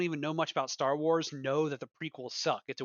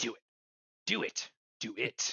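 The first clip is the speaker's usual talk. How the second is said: put-on evil villain voice, low and sinister; 4 semitones lower than usual. Joking about practicing villain voices in the mirror, the speaker demonstrates an evil Sith voice. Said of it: "practicing my evil Sith voices".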